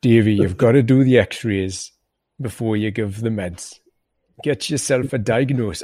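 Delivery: put-on Jamaican accent. Speaker quoting his boss from the start of his career, Jamaican accent. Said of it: "I've gone all Jamaican there now".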